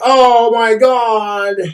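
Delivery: weepy, sobbing, tearful cry, God drawn out. Retelling a girlfriend's reaction to a ring gift: imitating someone crying. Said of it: "she was all crying and like".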